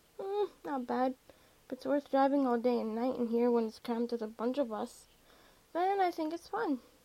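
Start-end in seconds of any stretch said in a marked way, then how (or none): none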